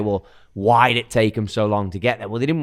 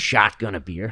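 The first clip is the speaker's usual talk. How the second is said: acted American-accented voice. Asked by another speaker to speak in one: american accent. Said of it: "Can you speak in an American accent?".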